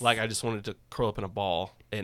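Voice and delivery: ordinary talk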